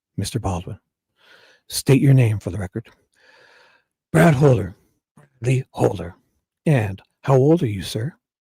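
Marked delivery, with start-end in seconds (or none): 4.1-6.2 rough, gruff voice. Acting out a deposition, answering as witness Brad Holder in a gruff voice. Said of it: "I'll just do that gruff voice for Holder".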